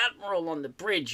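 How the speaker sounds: ordinary talk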